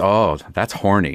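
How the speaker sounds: wealthy, rich lady's voice.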